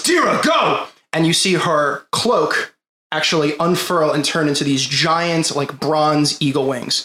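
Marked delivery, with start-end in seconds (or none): 0.0-0.9 very high-pitched shouted delivery. Game narrator voicing a character as rocks fly upward, yelling a command. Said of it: "and he yells".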